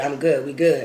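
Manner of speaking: normal talking voice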